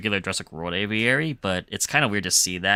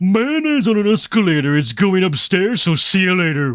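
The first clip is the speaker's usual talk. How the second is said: very high, very loud, belted cartoon voice; 12 semitones higher, 10 dB louder than usual. Delivering the mayonnaise-on-an-escalator line as a cartoon character: Patrick Star voice. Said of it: "I could do it in a Patrick Star voice".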